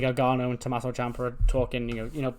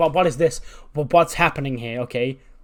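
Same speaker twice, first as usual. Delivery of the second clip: loud, enraged, stammering outburst; 6 dB louder than usual. Retelling a wrestler storming into a locker room: imitating a furious Zelina. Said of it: "She's furious".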